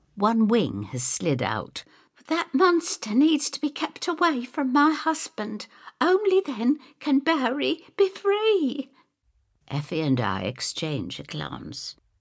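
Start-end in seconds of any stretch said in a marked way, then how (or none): 2.3-8.9 very high, agitated, animated, distraught outburst. Narrator voices a distraught young woman pointing at a shopping bag, distraught and animated. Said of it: "We're both astonished when Abigail Lurcher comes stumbling in, more animated than we've ever seen her".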